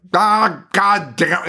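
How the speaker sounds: put-on mild half-scream. Imitating an actor's mild scream in a movie's last scene: imitating a half-hearted angry scream. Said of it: "And he is kinda screaming, but he kind of isn't".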